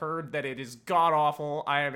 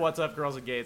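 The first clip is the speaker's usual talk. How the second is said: ordinary talk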